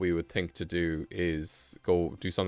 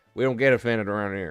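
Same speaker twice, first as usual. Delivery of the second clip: raised, put-on cowboy accent; 3 semitones higher, 6 dB louder than usual. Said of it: "That's my voice I go to".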